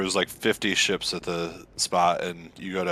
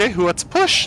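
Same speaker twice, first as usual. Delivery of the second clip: put-on full-on, very high, loud baby talk; 7 dB louder than usual. Retelling asking friends at the shoreline who wants to push, in baby voice. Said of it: "I said like complete baby voice".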